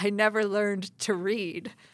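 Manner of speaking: sexy, sultry, seductive come-hither delivery. Retelling a film line from a seductive scene: imitating a sexy voice. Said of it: "In this, like, sexy voice".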